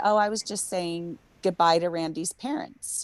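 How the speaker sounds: ordinary delivery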